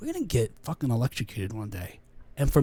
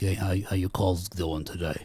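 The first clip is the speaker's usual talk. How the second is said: casual, greasy, burly boss-type voice; 8 semitones lower than usual. Retelling how the manager came over to ask about calls: imitating a burly greasy manager. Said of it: "this burly sort of, you know, greasy looking guy would come over and be like".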